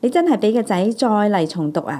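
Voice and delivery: ordinary talk, nothing marked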